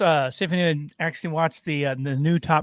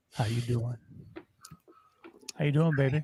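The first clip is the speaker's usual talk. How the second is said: soft, seductive voice; 3 semitones lower, 8 dB quieter than usual. On the Mac and Chuck show, teasing a co-host's greeting, mocking a sultry voice. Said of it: "I can use a sultry voice".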